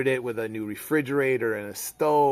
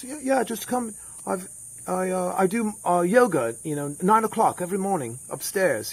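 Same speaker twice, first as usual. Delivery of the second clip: put-on higher-pitched English accent; 6 semitones higher than usual. Speaker quotes a man who exported marble, english accent impression. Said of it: "this is my English accent uh, impression".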